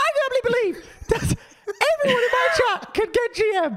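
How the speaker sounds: tiny, very high, squeaky voice through laughter. Retelling what Super said about his chat after you called them out, in Super's little voice. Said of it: "he said in his little super voice".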